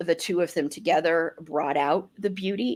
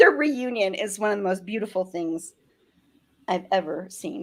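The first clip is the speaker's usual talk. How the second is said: choking up, getting teary, close to crying. Talking about the characters' reunion, choking up. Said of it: "I'm going to cry".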